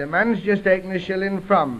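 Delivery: plain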